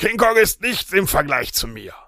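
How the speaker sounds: worked-up, aroused, agitated, excited delivery. Showing how a line was stressed, with an agitated, excited delivery. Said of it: "Also erregt. So".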